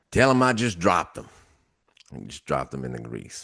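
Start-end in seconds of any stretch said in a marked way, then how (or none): 0.1-1.3 play-acted, high hollered yelling. Retelling a long wait for food, voicing someone inside yelling back; retelling a yell. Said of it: "yell back".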